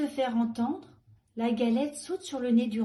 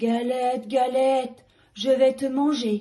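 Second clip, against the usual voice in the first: loud, big-voiced, growling bear voice; 6 dB louder than usual. Narrator voicing the bear as it meets the Galette, growling in a big voice. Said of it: "grogne l'ours de sa grosse voix".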